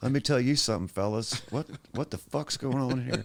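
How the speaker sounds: high, slack-jawed put-on voice, jaw hanging open. Imitating how Billy Bob Thornton talks: Billy Bob Thornton voice. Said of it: "he's just got a really interesting way that he talks. He's like".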